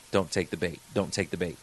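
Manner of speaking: barely voiced, very quiet, low mouthed words. Speaker retelling someone mouthing to him during an audience interaction, very quiet voice. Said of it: "mouthing in a very quiet voice".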